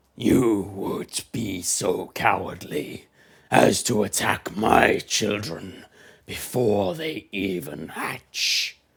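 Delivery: great dragon voice, deep and slow. The dragon speaks to those attacking its unhatched eggs; deep dragon voice. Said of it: "echoing laughter fills the chamber as this deep voice".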